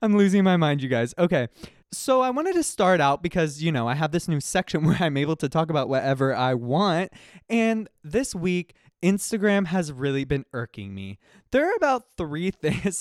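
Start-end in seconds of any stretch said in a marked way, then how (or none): 11.5-13.0 high, excited voice cracking and breaking up. Podcast host opening a new segment for listeners, voice cracking with excitement. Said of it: "my voice is cracking because I'm just really excited".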